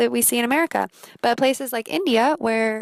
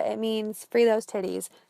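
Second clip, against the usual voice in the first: ordinary talk, nothing marked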